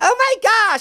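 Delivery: harmless gentle voice, pitched way up and light.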